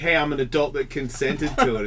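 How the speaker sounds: ordinary talk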